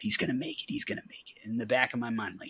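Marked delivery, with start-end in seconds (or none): 0.0-1.5 hushed whisper under the breath. Retelling watching a field goal on TV: imitating a whisper under breath. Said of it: "whispering under my breath".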